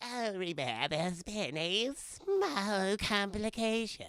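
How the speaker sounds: strange, very slow, small, drawn-out griffin voice. Retelling a movie scene, imitating the griffin's odd voice. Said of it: "why does he sound this way".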